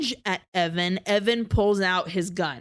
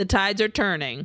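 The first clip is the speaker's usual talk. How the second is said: ordinary talk, nothing marked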